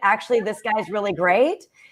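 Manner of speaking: ordinary talk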